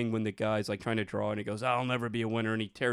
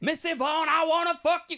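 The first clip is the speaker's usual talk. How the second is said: very high-pitched, loud yell; 6 dB louder than usual. Riffing on Pee-wee's Playhouse characters at home, yelling. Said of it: "I'm yelling this in my house".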